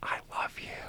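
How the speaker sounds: quiet whispered voice.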